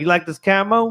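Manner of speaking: pro wrestler trash-talk taunting voice. Riffing on a wrestling promo: Moxley voice. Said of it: "should have Moxley do it".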